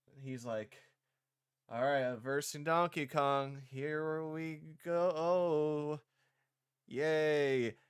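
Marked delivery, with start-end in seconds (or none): 1.7-7.7 flat, slow, lifeless read, drawing out "go". Mocking a rushed voice-acting line reading: flat, lifeless Chris Pratt impression. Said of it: "there's just nothing behind it".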